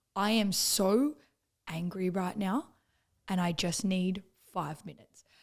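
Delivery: calm, slow, measured and controlled voice. Retelling a first argument in the car: imitating Corey's calm voice. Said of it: "he was so calm and he".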